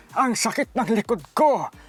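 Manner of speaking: put-on elderly voice. Showing off dubbing voices for viewers, doing an old person's voice. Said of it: "Ganitong boses. Ang tanda".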